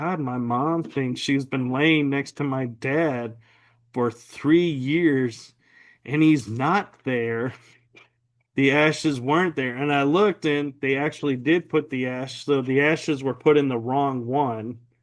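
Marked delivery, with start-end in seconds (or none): none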